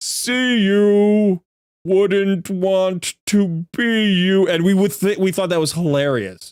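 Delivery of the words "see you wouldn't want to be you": very slow, stretched-out, pitched-up joke voice. Recalling a saying they always repeated while playing, saying it in that voice. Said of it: "we would always do that in that voice".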